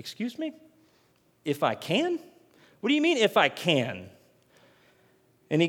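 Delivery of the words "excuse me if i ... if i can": put-on sassy, pointed attitude with swooping voice. Retelling a Bible scene where a father asks for help: imitating Jesus with attitude. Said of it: "the kind of attitude in that".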